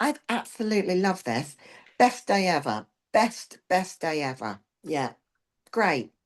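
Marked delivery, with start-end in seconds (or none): 0.0-4.6 fake gushing enthusiasm, high and swooping. Playing along with a training partner's joke about fooling the coach: fake enthusiasm. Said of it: "So I try to pretend".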